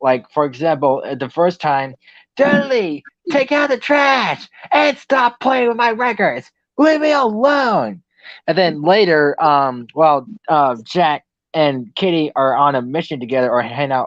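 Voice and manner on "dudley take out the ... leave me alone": mock, very high, shrill, nagging scolding yell. Retelling a cartoon episode, the mom's recorded voice: imitating a mom yelling. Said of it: "started yelling at him".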